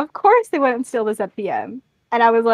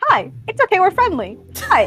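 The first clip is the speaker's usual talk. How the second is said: awkward, clumsy attempt at friendliness, a bit high; 8 semitones higher than usual. Retelling how John walks into the village: imitating John awkwardly. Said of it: "He's so bad at this".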